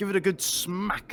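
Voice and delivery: rough, bad Irish accent, pitched high. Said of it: "In the words of Conor McGregor".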